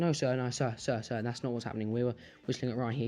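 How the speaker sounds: ordinary talk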